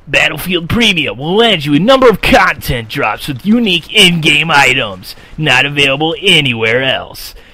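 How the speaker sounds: loud, hyped arena monster truck announcer voice. Reading a game promo blurb aloud in a monster truck announcer voice. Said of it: "I'll read this in the Monster Truck announcer voice".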